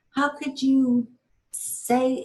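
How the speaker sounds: scolding, critical voice. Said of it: "it was more like".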